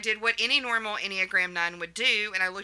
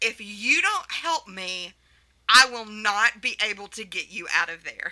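play-acted, somewhat raised voice, slow, spelled out letter by letter. Retelling own words to someone in an escape room: retelling a raised voice. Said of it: "kind of with a raised voice said".

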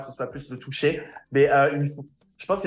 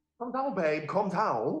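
soft, soothing, higher British accent; 5 semitones higher, 4 dB quieter than usual. Speaker does their alter ego Bobby: Bobby's British accent. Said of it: "Bobby, c'est mon alter ego euh, British".

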